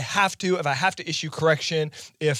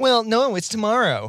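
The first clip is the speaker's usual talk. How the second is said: mock snarky, snide tone, much higher pitch; 6 semitones higher, 4 dB louder than usual. Speaker acting out someone's reply while recounting a tense email exchange, mock snarky, snide tone. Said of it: "intonate this sort of snarky, snide tone".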